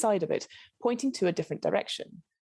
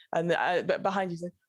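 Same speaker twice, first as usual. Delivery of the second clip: normal talking voice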